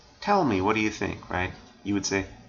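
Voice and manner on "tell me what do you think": plain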